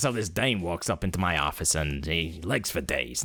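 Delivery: exaggerated, full-on hard-boiled noir detective voice. Showing how Detective Pikachu does not talk: exaggerated hard-boiled detective voice. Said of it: "He's not full on detective. He's not like this".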